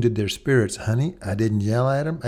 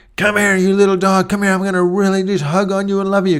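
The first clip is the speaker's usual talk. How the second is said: rough, harsh, loud, rapid call; 8 semitones higher, 7 dB louder than usual. Showing the boys how dogs respond to tone, calling the dog, mock-harsh tone. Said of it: "harshly saying to the dog".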